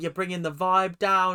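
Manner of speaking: usual speaking voice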